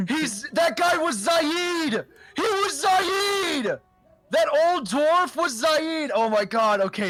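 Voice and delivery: shrill, very high, excited shouting. A player suddenly remembering who the old dwarf was, excited yelling. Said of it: "sorry for yelling".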